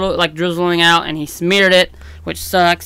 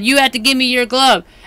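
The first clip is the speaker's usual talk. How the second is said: mock shouted, high-pitched yelling, girlish; 6 semitones higher than usual. Retelling what a girl yelled at a player: imitating a girl yelling. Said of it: "she yelled at him and said".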